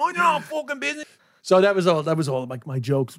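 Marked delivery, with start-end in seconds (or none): 0.0-1.0 very high, hard, put-on tough Dublin street accent. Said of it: "a Dolphins Barn version of that too".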